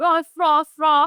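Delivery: dog barking with an Irish accent. Joking around after hearing someone is irish: dog bark in irish accent. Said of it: "gotta bark in an Irish accent".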